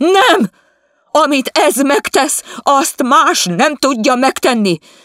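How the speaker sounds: shrill, high, loud, drawn-out shout. A woman kneels up in bed, shouting back at her husband Vizi: shouting. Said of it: "Kiabált az asszony".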